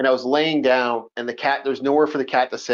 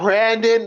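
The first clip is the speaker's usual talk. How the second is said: exasperated, weary, sighed-out delivery; 8 semitones higher than usual. Describing how she reacts to Brandon, the speaker imitates her sighing the name. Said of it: "The sigh".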